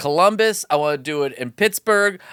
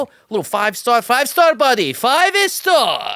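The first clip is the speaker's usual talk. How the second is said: playful put-on Persian accent, higher, slower; 6 semitones higher than usual. Asking listeners to rate the podcast, the host slips into a put-on Persian accent. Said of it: "Are you doing a Persian accent right now?".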